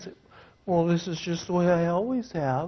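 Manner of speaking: very quiet, soft, weak, wimpy whiny voice. George answering someone who criticizes his handshake, in a wimpy, whiny voice. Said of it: "that wimpy, whiny voice".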